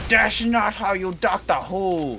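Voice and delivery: high, slow, mild mock yell, offended. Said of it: "screaming at me".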